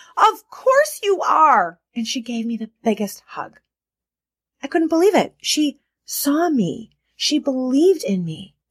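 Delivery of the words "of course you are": put-on delighted, exultant, high, swooping joyful scream. Retelling how her best friend stomped her foot: retelling a joyful scream. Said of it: "joyfully screams out loud".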